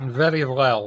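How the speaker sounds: bad put-on Russian accent. Voicing a character in a game who wants money back: bad Russian accent. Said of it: "I'm so ashamed of this accent".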